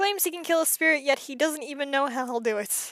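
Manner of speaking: ordinary delivery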